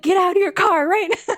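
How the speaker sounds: shrill, very high, screamed yelling. Retelling how agents who stopped her car screamed at her: imitating agents screaming. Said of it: "they start screaming at me".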